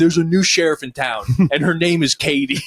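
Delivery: acted loud, high, firm shouting. Retelling a mother yelling from the kitchen at kids in their rooms: imitating mom yelling. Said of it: "yelling at us while we're in our rooms".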